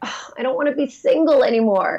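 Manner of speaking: depressed, tired, over-it tone, slightly high pitch. Showing how the phrase used to sound: imitating own depressed, tired tone. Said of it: "sort of like a depressed, over it, tired way of speaking".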